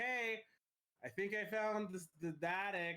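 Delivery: loud, called-out voice. A player's character calls to the others through a closet after finding the attic, yelling. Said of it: "I yell through the closet".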